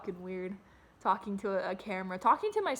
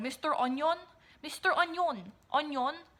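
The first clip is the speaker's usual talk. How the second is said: put-on Icelandic accent; 6 semitones higher than usual. Retelling a YouTuber's video about Onision, speaker imitates her foreign accent. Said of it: "she has this accent, and she'd be like".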